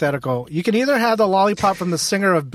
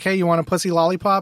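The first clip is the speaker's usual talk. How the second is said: ordinary delivery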